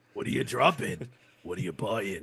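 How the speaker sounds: low, soft, hushed voice. Asked to say the line again in the Resident Evil merchant voice. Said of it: "same voice as the Resident Evil uh, merchant".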